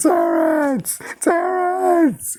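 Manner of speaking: play-acted, very high, tearful sobbing cry. Retelling a woman finding her husband dead in his car, imitating her crying. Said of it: "she's like crying".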